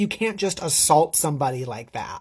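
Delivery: normal talking voice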